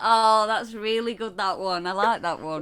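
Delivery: loud, heavily laid-on sarcastic tone. Right after telling Ellie a Christmas pun, praising it: sarcastic praise. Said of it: "That sounds so sarcastic".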